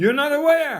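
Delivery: abrupt, sudden, very high, shrill, very loud shout. Shouting suddenly at the audience to show them the volume of a voice: sudden shout. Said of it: "before the shouting".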